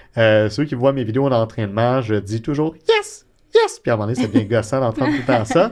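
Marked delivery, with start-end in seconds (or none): 2.9-3.8 tiny, very high-pitched voice. Speaker shows how he says yes in his training videos, small high-pitched tone. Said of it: "je dis yes avec un petit ton aigu comme ça".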